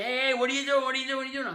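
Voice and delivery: rattled-off high, fast, loud screaming, over and over. Retelling how a man being beaten in a corner screamed: imitating a man screaming. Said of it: "he's just screaming".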